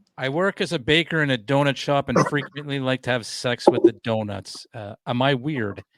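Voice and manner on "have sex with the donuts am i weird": ordinary talk, nothing marked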